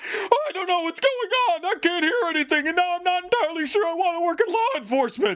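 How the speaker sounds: very high, freaked-out, frightened voice. Narrator voicing a man who suddenly can't hear anything, frightened. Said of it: "start to freak him out".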